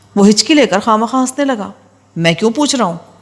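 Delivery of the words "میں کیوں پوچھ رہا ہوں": stern, harsh voice. Reading a story aloud, voicing an angry questioner: harsh tone. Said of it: "میں نے سخت لہجے میں کہا".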